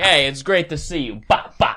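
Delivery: high-pitched Italian mobster voice. Picturing a mob scene where Pesci slaps a guy: Joe Pesci impression. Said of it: "Pesci walking up to another guy in the mob".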